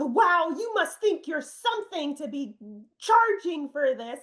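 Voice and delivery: mock angry woman's voice. Retelling a woman's reply to being sent critique rates, imitating an angry woman. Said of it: "she just got so mad".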